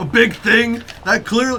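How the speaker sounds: incredulous, high, loud mocking taunt, in character.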